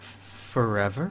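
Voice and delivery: soft, hushed, eerie ghostly voice. Voicing the one-word answer given through a ritual, in a ghostly voice. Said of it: "ghostly voice".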